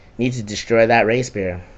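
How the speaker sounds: ordinary talk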